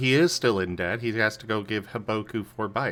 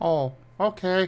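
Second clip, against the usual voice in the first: crestfallen, sad, small, slightly high-pitched voice; 9 semitones higher than usual. Answering a warning of coming home late tonight, sounding sad. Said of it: "Why did you sound so sad?".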